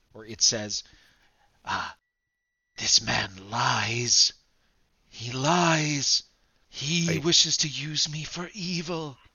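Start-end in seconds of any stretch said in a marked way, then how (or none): 1.7-9.2 whispering voice. Voicing the Hidden Lord warning a player about a man: whispering. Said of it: "the Hidden Lord whispers to you".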